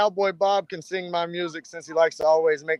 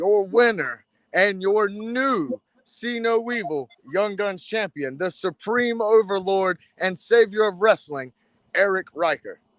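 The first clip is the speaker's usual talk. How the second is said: wrestling ring announcer voice, called out; 3 semitones higher than usual. Hyping the coming title win as Cowboy Bob will announce it, Cowboy Bob announcer voice. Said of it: "Cowboy Bob's gonna announce Saturday night".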